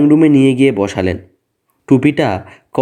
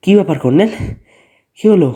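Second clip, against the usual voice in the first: breathless, out of breath, higher pitch; 5 semitones higher than usual. After gunshots, the narrator reaches the colonel at the gate, breathless. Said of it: "রুদ্রশ্বাসে বললুম".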